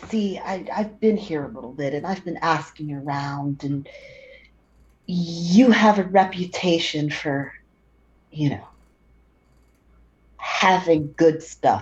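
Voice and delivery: low voice. Quinn tells someone he has been asking around about them, in a lowered voice. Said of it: "Quinn sort of lowers his voice".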